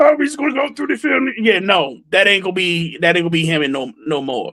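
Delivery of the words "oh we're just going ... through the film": high-pitched, rattled off quickly. Speaker acting out what a player might say, Kermit the Frog voice. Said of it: "I'm trying to do my Kermit the Frog voice".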